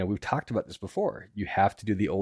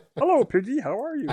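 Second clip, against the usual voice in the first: loud voice pitched up high; 5 dB louder than usual. Joking that people are puppets, speaking in Kermit the Frog voice. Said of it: "talking like Kermit the Frog".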